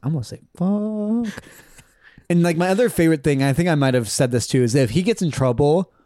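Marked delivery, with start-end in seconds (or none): 0.0-1.4 quiet, slow, careful, high-pitched, fuck drawn out. Speaker acts out what he says before swearing, said quietly. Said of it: "He says it quietly too".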